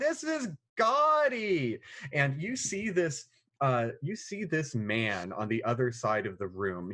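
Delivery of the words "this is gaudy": loud, very high cry, gaudily drawn out. Narrating a player character's entrance into a gold room: shouting out loud. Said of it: "your voice shouts out loud".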